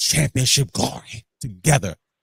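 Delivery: put-on wrestling promoter style voice. Promoting a wrestling platform's show, slipping into a Vince voice. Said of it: "I don't know why I did a Vince voice right there".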